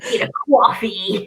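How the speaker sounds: rough, bad, put-on New York accent. Speaker tries out the one American accent they sometimes attempt, New York accent. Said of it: "The only American accent I kind of try and do sometimes is New York".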